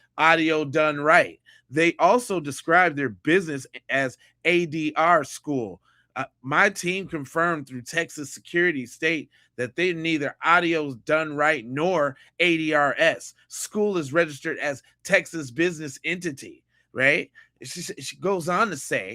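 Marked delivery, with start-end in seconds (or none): none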